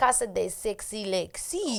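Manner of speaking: attempted French accent. Joking about Lexi's new place: fake French accent. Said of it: "we made the accent French".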